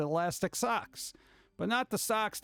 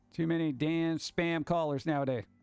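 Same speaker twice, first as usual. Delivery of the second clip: ordinary talk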